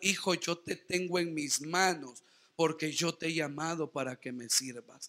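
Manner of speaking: mock tender, soft voice full of love. Telling the church what the Lord says to a troubled believer, in a put-on loving voice. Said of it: "el Señor le está diciendo con voz de amor".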